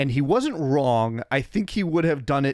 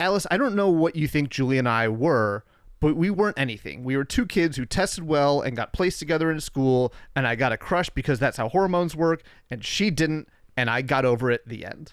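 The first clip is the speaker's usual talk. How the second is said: plain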